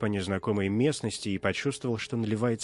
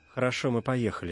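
ordinary delivery, nothing marked

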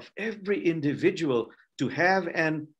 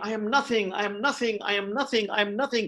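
high, overwhelmed, fervent crying out; 5 semitones higher than usual. Telling a story about a rabbi in a synagogue, acting out exclaiming.

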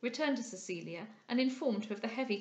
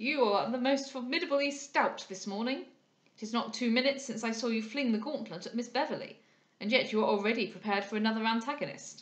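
plain

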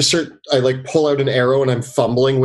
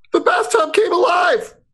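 very high in-character shout. Voicing a character who hides under a table: yelling in character. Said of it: "and he yells out, he goes".

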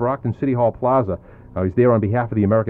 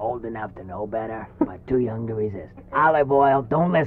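soft, quiet cartoon sailor character voice; 4 dB quieter than usual. On a country radio show, asked Popeye's age, answering in a Popeye impression. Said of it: "does a great impression of Popeye".

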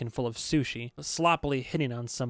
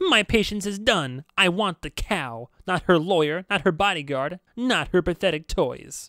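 high, loud, silly skeleton voice; 6 semitones higher, 6 dB louder than usual. Reading a story where an animated skull speaks on a feed: Tilly's silly skeleton voice. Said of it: "the silly skeleton voice said".

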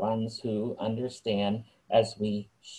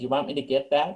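sarcastic, pretend-helpful, quipping tone; 3 semitones higher than usual. Retelling a thought during a church service bell ringing: retelling a sarcastic quip. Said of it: "In my sarcasm, I thought the phone was ringing and wanted to say".

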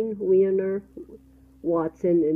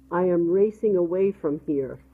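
ordinary delivery

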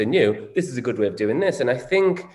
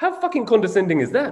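put-on South African accent, pitched up; 9 semitones higher than usual. Retelling a woman's reaction to being called sweetheart, in a south african accent. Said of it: "Can I do the accent?".

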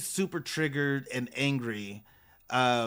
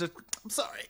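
put-on fake sobbing, higher and quieter; 3 semitones higher, 7 dB quieter than usual. Imitating a cast member's fake cry while she talks about her daughter: imitating Jessica's fake cry. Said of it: "That was a fake cry".

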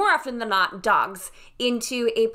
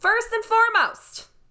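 very high, sudden, high-pitched shouted yell; 12 semitones higher, 4 dB louder than usual. Giving tips on including a dog at a wedding, yelling. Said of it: "I don't know why I'm yelling".

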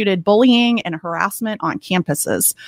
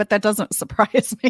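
talking through laughter. Hearing california came last in a ranking, the speaker answers laughing while speaking. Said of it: "I'm sorry I'm laughing".

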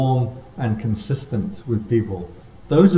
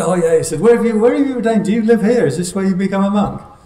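put-on excited voice, much higher pitch; 9 semitones higher, 5 dB louder than usual. Telling about a morning taxi ride, the speaker quotes the driver: imitating an excited taxi driver.

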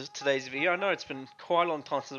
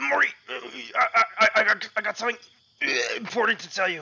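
cartoon grandfather voice, pitched much higher; 8 semitones higher, 6 dB louder than usual. Waking Morty at 3 a.m. with news, Rick impression, stammering. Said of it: "they added me as a Skin [name]. I, I, I, I'm a [name] Skin [name]. I'm [name] [name]!".

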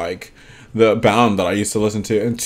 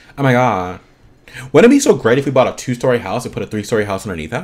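ordinary talk, nothing marked

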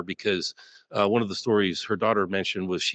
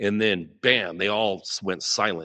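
normal talking voice

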